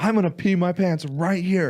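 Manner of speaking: shrill, very high, loud, desperate screaming. Telling a story about a man arguing with a lady by the bathrooms, imitating someone screaming. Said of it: "and like screaming".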